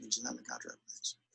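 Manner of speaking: very soft, timid, weak and powerless-sounding voice. Speaker replays how Ryan said the line: imitating Ryan's weak, smileless delivery. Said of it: "you went like this ... it's about as powerful as what I'm doing right now".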